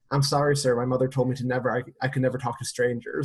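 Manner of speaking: put-on deadpan, straight-faced delivery. Retelling what a daughter said when ignoring him: imitating a straight-faced reply. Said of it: "with a straight face, she's like".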